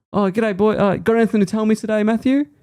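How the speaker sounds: very high, squeaky motherly voice. Retelling how Mum asked Matthew a question differently: imitating Mum. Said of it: "she decided to ask Matthew in, like, a different way".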